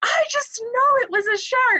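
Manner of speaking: insistent, high-pitched voice.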